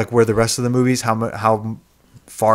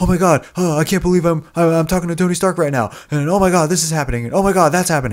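high, fast, tumbling, stammering run-on babbling; 7 semitones higher than usual. Mocking how a movie Spider-Man sounds: imitating Tom Holland's Spider-Man. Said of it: "that's literally how, what he, how he sounds".

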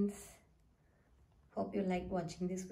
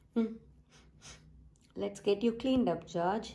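ordinary delivery

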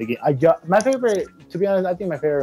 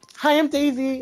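put-on high cheery character voice. Mocking a game character's voice: imitating Daisy's annoying voice. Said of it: "Her voice, though. She's like".

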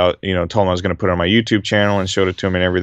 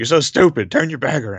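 mock high, scolding old man voice, yelling; 7 semitones higher than usual. Retelling how an old man on a crowded train yelled: imitating an old man yelling. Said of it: "yelled at me".

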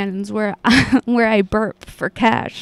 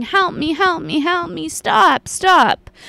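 repeated high, shrieking cries; 6 semitones higher than usual. Retelling what a lady in a bunny suit cried out: imitating someone screaming. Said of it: "she was screaming".

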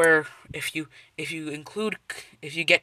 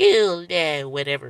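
put-on voice of a six-year-old child. Saying a catchphrase to mark the video made for kids: put-on six-year-old voice. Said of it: "stupid six-year-old, old crappy voice".

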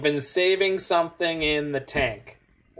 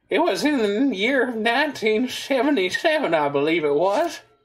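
put-on wheezy old man voice, pitched up; 7 semitones higher than usual. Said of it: "get the wheezy old man sort of go".

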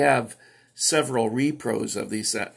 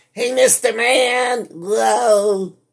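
shrill, drawn-out comic voice, "whoa" stretched high and loud; 12 semitones higher, 8 dB louder than usual. Giving viewers a shout out: poor Jerry Lewis imitation. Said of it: "That was a poor imitation of Jerry Lewis".

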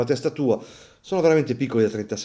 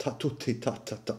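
much quieter Calabrian accent, t aspirated like h; 12 dB quieter than usual. Praising the Calabrian accent, the speaker demonstrates a Calabrian accent, aspirated T. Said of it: "l'accento calabrese... Dopo la T c'è sempre la H".

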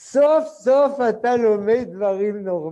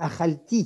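אכלתי stressed on the final syllable; 4 dB quieter than usual. Describing how French immigrants stress Hebrew words: last-syllable stress on אכלתי. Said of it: "הם מבטאים הכל מלרע".

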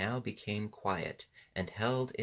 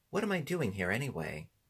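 ordinary delivery

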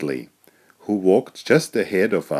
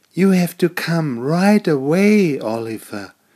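breathless, winded, pitched up; 9 semitones higher, 3 dB louder than usual. Arriving at Oliver's golf game, Molly the mole urges him to come, breathless. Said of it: "she said breathlessly".

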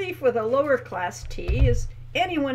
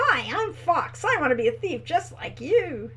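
fake, over-chirpy, falsely high and cheery voice; 4 semitones higher than usual. In a story, one character mocks another in a falsely high, cheery voice. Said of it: "He spoke in a falsely high, cheery voice".

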